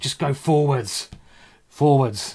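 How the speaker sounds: fired-up, annoyed, angry tone. Playing a game against an opponent, urging himself to keep going forwards, angry. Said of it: "And I'm now angry".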